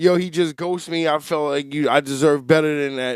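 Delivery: normal talking voice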